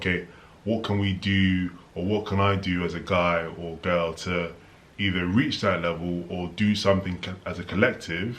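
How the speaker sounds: normal talking voice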